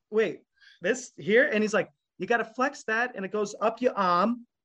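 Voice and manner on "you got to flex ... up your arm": light, casual, put-on Boston accent. Retelling how a man showed her a muscle, quoting him: little Boston accent. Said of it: "his like little Boston accent".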